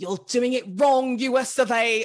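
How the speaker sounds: loud put-on British accent. Announcing the lightning round theme, put-on British accent. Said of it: "good British accent".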